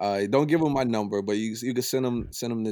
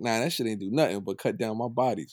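ordinary talk

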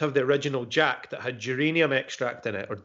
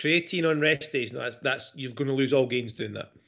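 normal talking voice

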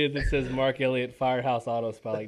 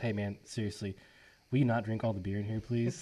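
put-on dead-serious, earnest tone; 3 semitones lower, 7 dB quieter than usual. Retelling what Marty said, quoting him: imitating Marty, serious tone. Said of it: "he was serious".

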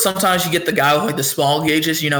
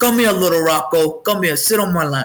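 put-on old Italian grandpa voice. Acting out the grandpa calling little Rocco over: imitating a pizzeria grandpa from Italy. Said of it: "And he's like".

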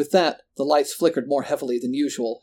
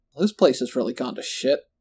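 plain reading voice

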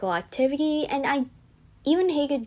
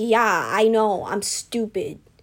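put-on angry, annoyed voice, louder; 4 dB louder than usual. Retelling answering the teammate who laughed: imitating own angry reply. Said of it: "I got really mad at them".

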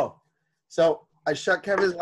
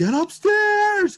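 put-on, very high-pitched screaming; 4 dB louder than usual. Retelling losing it at him during a work meeting: retelling screaming at someone. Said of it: "So I start screaming at him".

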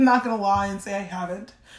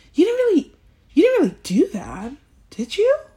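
imitated tone, much higher pitch; 10 semitones higher, 6 dB louder than usual. Complaining about a loaded question, the speaker mimics people who ask it, mocking a questioner's tone. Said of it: "Even in that fucking tone and cadence".

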